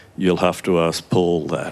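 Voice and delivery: mock-deadpan delivery. Retelling an interview, the speaker quotes the interviewee's answer, imitating a deadpan reply. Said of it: "he just deadpans".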